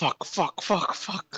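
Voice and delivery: slow, repeated whisper under the breath. Retelling how Chuck sounded while running: imitating Chuck whispering. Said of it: "he whisper".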